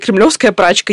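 ordinary delivery

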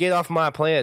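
put-on clumsy country boy accent. Repeating what a character said, in an attempted country boy accent. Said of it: "In his best country boy accent".

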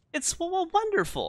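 squeaky little gnome voice, very high. Narrator voicing a small gnome speaking to the player, high-pitched gnome voice. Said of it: "begins to chatter in a high-pitched voice".

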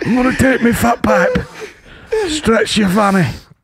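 breathless, puffing, very high-pitched voice. Doing dialogue in a comedian's voice when asked: Johnny Vegas voice. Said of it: "do the weekend's dialogue with Johnny Vegas's voice".

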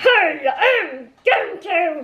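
put-on puppet voice. Asked what the puppets sound like, the puppeteer shows one: Duncan puppet voice. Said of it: "What do their voices sound like when you're puppeting them?".

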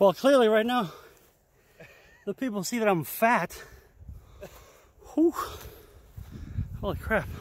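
out of breath. Walking up a hill filming with a gimbal: out of breath. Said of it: "I'm already out of breath".

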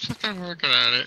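put-on high, grumpy, whining voice.

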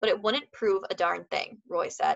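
ordinary delivery

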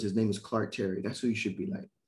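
usual speaking voice

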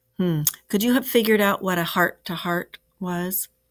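ordinary delivery

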